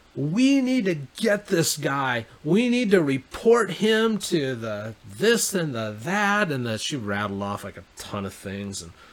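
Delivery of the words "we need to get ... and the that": high, slow, drawn-out yell at top of lungs. Retelling what a woman yelled to everyone around them, retelling a yell at full lungs. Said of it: "she's like yelling at the top of her lungs".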